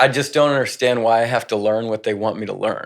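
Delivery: ordinary delivery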